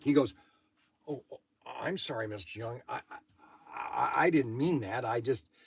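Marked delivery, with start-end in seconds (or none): 1.1-5.4 put-on flustered, stammering, stumbling, caught off guard. Retelling a complaining customer's reply: imitating a taken-aback apology. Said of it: "he was taken back".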